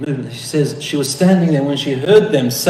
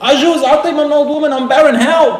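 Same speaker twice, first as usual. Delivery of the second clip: put-on play-acted very high, screaming, astonished old woman's cry; 12 semitones higher, 3 dB louder than usual. Retelling a story, acting out a shocked old woman: acting out a woman screaming. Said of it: "she screamed and hid her face and saying".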